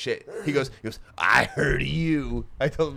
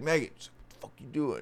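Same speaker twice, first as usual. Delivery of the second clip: put-on drunk Midwestern man's voice, quieter; 6 dB quieter than usual. Speaker retells a man calling out to a woman, imitating a drunk midwestern man. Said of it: "just like Midwestern drunk asshole".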